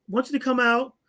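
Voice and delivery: ordinary talk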